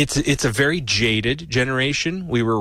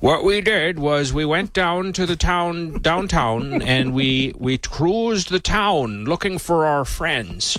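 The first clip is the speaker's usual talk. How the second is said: put-on old-fashioned sounding voice; 4 semitones higher than usual. Speaker reminiscing about Gen X youth in the 90s; old-timey voice. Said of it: "he sounds so old-timey".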